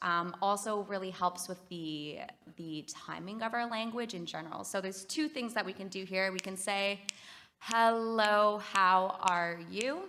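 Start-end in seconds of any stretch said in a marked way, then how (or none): 7.6-10.0 very slow, loud, syllable by syllable. Demonstrating a speech rate exercise for the group, very slow. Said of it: "Which is very slow".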